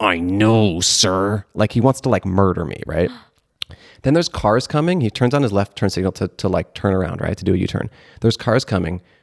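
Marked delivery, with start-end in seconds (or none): 0.0-1.5 gritted-teeth, barely held back, through clenched teeth. Speaker recounts a driver's reply to them, imitating talking through clenched teeth. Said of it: "through clenched like teeth".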